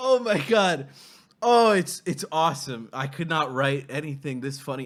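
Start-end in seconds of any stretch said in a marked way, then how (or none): 0.0-2.9 talking while crying with laughter. Reacting to a funny play, laughing to tears while talking. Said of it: "I'm tearing up".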